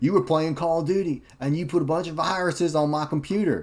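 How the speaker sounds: mock very high, loud scolding yell. Retelling how the dad came down and yelled: imitating dad yelling. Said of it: "he yelled at me".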